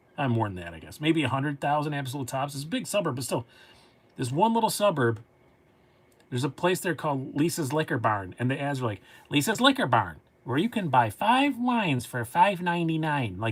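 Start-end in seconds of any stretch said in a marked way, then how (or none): 9.3-13.4 put-on Michigan Upper Peninsula (Yooper) accent. Imitating a local radio ad: Upper Peninsula Michigan accent. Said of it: "they all sound like they're from the upper U P of Michigan".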